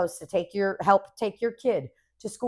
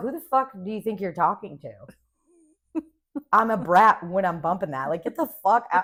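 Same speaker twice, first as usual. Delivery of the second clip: mock furious, mad, indignant delivery. Retelling their own comeback to a woman who upset them, imitating an angry retort. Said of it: "I was mad".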